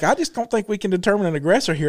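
ordinary delivery

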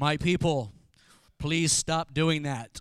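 very deep, slow voice. Imagining God talking to his people, in a James Earl Jones voice. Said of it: "he has his James Earl Jones voice".

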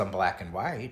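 ordinary talk, nothing marked

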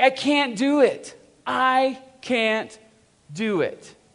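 put-on very slow, high, drawn-out toddler voice. Retelling what his three-year-old said: imitating his three-year-old. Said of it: "And she's like".

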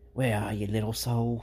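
put-on New Zealand-accented voice. Quoting a film character searching for a lost soul: [name]'s New Zealand accent. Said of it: "great New Zealand accent".

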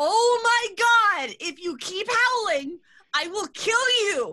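acted very high, very slow, drawn-out furious shout. Voicing Lorelai's sister shouting at a howling brother: voicing Lorelai's sister yelling. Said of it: "another, like, voice, which you know is Lorelai's sister".

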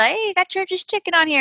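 mock shrill, very high shout. Retelling what he yelled on a live, imitating someone yelling. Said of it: "He yells".

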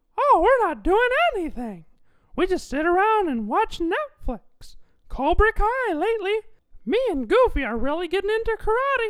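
pitch pushed way up with a swinging tune. Answering the host's question about free time, in a Mickey Mouse voice. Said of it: "Mickey Mouse, how are you?".

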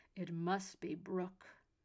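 growling, accusing tone. Narrator reads a vampire's line to the others; growling accusingly. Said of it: "the vampire growled accusingly".

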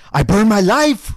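high, loud, passionate, all-out outcry. Showing another speaker how the line should be said: passionate Stellan Skarsgård delivery. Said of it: "That's how you gotta say it".

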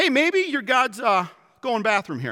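put-on open mocking jeering tone. Retelling the story, the speaker voices Elijah mocking the prophets of Baal, acting out a mocking taunt. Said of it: "Elijah starts to mock the prophets of Baal".

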